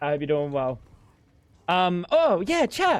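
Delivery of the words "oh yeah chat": sudden, very high, happy burst. A streamer greeting chat, sounding so happy. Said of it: "I sounded so happy for a second there".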